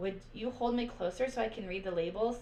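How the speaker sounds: ordinary delivery, nothing marked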